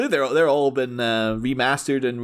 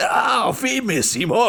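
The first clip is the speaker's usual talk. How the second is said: very high, very slow, drawn-out cartoon voice; 9 semitones higher than usual. Recalling clips seen in recent years, imitating a voice from Captain N. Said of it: "always hear that voice".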